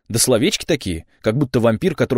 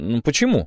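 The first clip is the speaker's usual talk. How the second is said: ordinary delivery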